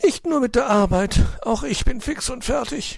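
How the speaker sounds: breathless, very high-pitched, panting gasps. A magpie who has just finished the work answers her master, panting. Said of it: "keuchte die elster".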